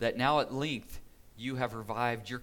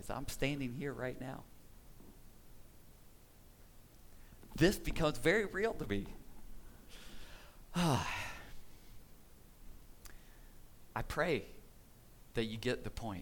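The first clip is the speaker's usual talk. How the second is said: emotional, moved, much quieter voice; 6 dB quieter than usual. Thanking a church that reached out during the fires, getting emotional. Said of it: "I'm getting emotional thinking about you guys".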